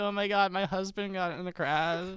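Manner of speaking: overwrought, distraught, emotional woman's voice. Mocking a man on video as if he were Tiger's new wife: imitating a distraught wife. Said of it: "Tiger's new wife".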